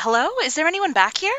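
high-pitched call. In character, calling out to check if anyone is back there. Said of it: "I'll call out".

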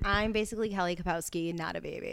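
normal talking voice

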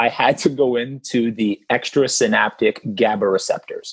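plain

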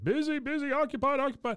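very high, frightened, bleating voice. Retelling what a man in a trench coat said at a door, imitating him frightened. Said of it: "He sounds so frightened".

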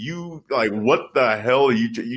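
ordinary talk, nothing marked

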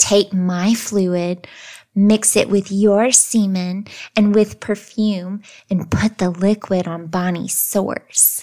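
very seductive, alluring and enticing voice. Narrating a story where a vagina speaks to Joseph, in a seductive voice. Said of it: "talked to Joseph in a very seductive voice".

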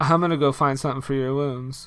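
indistinct mumble through every word, barely acted. Retelling how the girlfriend character says her line: imitating a mumbled line delivery. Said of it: "this is her exact delivery".

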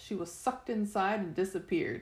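plain

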